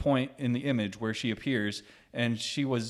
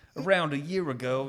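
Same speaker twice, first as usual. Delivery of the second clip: put-on, attempted Australian accent; 3 semitones higher than usual. Put on the spot to say it in an australian accent, the speaker starts talking. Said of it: "say it in an Australian accent".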